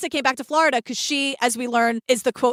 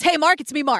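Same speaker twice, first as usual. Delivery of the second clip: ordinary talk, nothing marked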